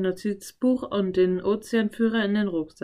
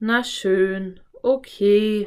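sighing voice; 4 dB louder than usual. Giving in to the other speaker, with a sigh. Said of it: "Philipp seufzte".

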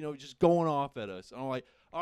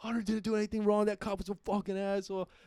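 mock mild yell, pitched up, as if from distance; 5 semitones higher than usual. Retelling yelling at the cops from a distance: imitating own yelling at cops. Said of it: "I'm yelling at the cops".

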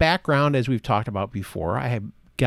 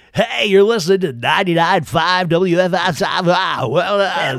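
loud, pitched-up radio DJ announcer patter; 5 semitones higher, 7 dB louder than usual. Showing how most radio people sound: imitating a typical radio dj voice. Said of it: "that kind of voice".

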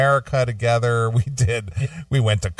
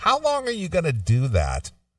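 high, swooping voice dripping with disgust and disdain; 6 semitones higher than usual. Retelling what a woman asked about the show: imitating disgust and disdain. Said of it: "with such disgust and disdain in her voice".

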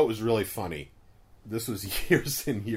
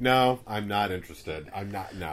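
mock point-blank, blunt, no-nonsense dismissive tone. Retelling how a coworker turned down invitations: imitating a blunt refusal. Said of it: "he was just very blunt".

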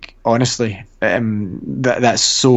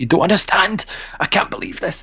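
mock, high, giddy, bursting overexcited celebrating voice; 9 semitones higher than usual. Retelling her answer to someone who told her to shut up, retelling her overexcited self. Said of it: "will you shut up?".

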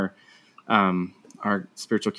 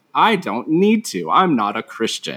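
mock brash, loud, swooping, obnoxious voice; 3 semitones higher, 5 dB louder than usual. Recounting her answer to a question put to the room, acting out speaking very loudly. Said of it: "I very loudly was just like".

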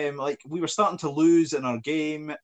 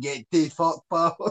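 put-on Scottish accent. Joking about Shrek played as a Glaswegian, Shrek with Glasgow accent. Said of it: "If Shrek was the Glasgow".

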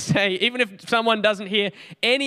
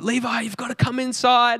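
mock yelling, calling out; 3 semitones higher than usual. Levi retelling how his mum called him inside from the back step, imitating mum yelling. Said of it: "she starts yelling".

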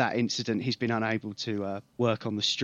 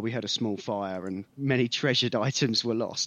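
ordinary talk, nothing marked

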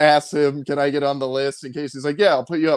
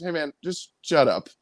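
usual speaking voice

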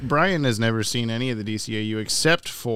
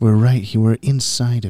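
ASMR-style delivery; 6 dB louder than usual. Opening a live show right after asking to add ASMR: ASMR-style delivery. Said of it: "add as much ASMR as possible?".

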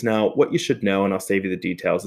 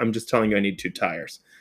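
ordinary talk

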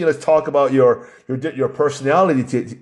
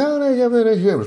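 put-on very feminine voice, much higher, slower; 10 semitones higher than usual. Speaker retelling a girl ordering food behind him, imitating her very feminine voice. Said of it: "very, very feminine voice".

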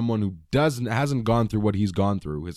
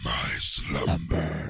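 dark mysterious booming trailer voice, lower and quieter; 6 semitones lower, 4 dB quieter than usual. Imitating the voice from the movie trailer: mysterious dark trailer voice. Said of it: "That's the voice".

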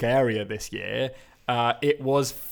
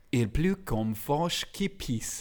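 put-on French accent on a French phrase; 7 dB quieter than usual. Sharing a favourite saying in French, in a put-on French accent. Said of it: "I'm going to do my French accent now".

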